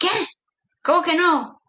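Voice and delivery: furious, angry, high-pitched, incredulous disbelief. Retelling what a man said when told she had never been with one: imitating an angry man. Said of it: "me mira con mucha rabia y me dice".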